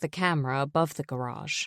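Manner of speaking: ordinary delivery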